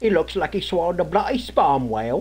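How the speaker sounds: fake, put-on British accent. Working on an accent, saying the one line they can: put-on british accent. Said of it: "the only thing I can say in British is".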